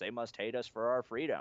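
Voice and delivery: ordinary talk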